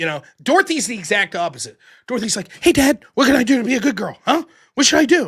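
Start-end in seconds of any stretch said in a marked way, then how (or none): 2.6-5.3 play-acted super excited puppy voice, high and loud. Voicing the family's young dog asking how to be good: imitating an excited dog. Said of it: "super excited".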